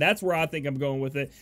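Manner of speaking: plain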